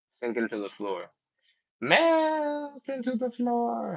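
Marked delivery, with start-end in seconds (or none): 1.8-4.0 very high, very slow storybook witch voice. Leading a floor cool-down after a countdown, in a Wizard of Oz voice. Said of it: "That's my that's my Wizard of Oz voice".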